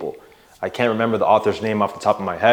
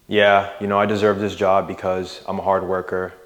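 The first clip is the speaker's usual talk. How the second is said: dull, flat, low-energy monotone. Demonstrating how boring it sounds to speak in a boring monotone. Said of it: "Not just speaking monotone like this".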